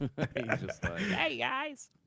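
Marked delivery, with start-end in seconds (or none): 1.0-1.9 very high, easy, casual voice. Imitating Prime just showing up: Prime impression. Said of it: "that's a good impression".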